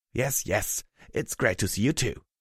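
ordinary delivery

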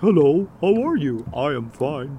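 high, loud cartoon talking-dog voice. A speaker shows what their talking dog says; talking dog voice. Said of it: "the dog voice is like".

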